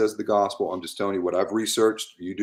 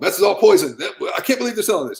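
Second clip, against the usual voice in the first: mock yelling, much higher and louder. Speaker reenacting himself walking down a grocery aisle: imitating own screaming. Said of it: "I'm the one screaming and yelling".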